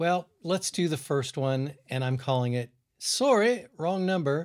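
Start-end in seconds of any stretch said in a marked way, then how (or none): 3.0-4.5 put-on British accent, pitched up. Speaker announcing the title of the first one: british accent. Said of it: "Was that your British accent?".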